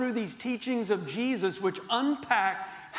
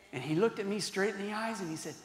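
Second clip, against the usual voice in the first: ordinary talk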